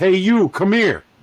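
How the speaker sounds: put-on full-on New Jersey accent. Retelling how the call center's boss hollered him over, in his most New Jersey voice. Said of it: "in his most New Jersey voice".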